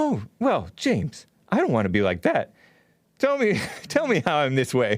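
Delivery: swooping, sing-song, caricatured parody voice. Showing how the other speaker pretends to be open, imitating the other speaker. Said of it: "Was that your imitation of me?".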